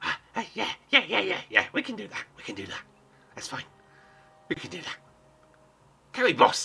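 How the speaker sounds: small, high goblin creature voice. Retelling a story, the speaker voices the little goblin answering his boss, little goblin voice. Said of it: "the little goblin goes".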